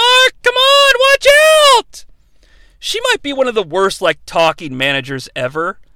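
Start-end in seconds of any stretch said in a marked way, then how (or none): 0.0-2.1 very high, piercing, shrill ringside cheering yell, acted out. Retelling a wrestling manager yelling at her wrestler: imitating a yell. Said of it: "she yells".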